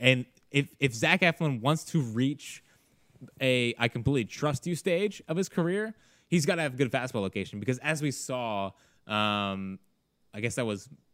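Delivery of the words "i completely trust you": ordinary delivery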